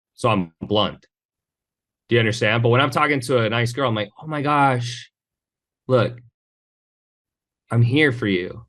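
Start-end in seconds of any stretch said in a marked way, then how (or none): 4.3-8.5 tender, caring, soothing, slow, gentle voice. Showing how they talk to a nice girl, the speaker uses a gentle nurturing tone. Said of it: "you have to match their tonality. Like she's a lamb. She needs to be nurtured".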